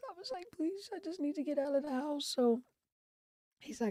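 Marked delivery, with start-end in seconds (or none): 0.6-2.3 mock tearful, crying, begging voice. Retelling asking their son for a drive, retelling a tearful plea. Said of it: "I'm crying".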